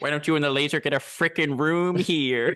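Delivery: campy villain voice. Reenacting a line from Austin Powers after being asked to: Doctor Evil impression. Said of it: "do a reenactment of Austin Powers".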